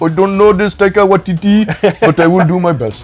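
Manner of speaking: imitated Egyptian accent. Imitating an Egyptian director replying about Taika Waititi: put-on Egyptian accent. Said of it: "That was a perfect Egyptian accent you just did there".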